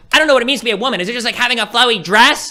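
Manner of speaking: high, loud mocking impression.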